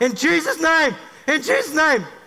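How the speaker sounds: mock high yelling in a back-and-forth call-and-response. Retelling yelling a man through a prayer: retelling own yelling of a prayer. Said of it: "I yell him through".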